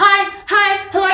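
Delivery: very high, pushy, obnoxious voice. Retelling how she greets roadies at shows: imitating her obnoxious self. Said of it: "just so obnoxious".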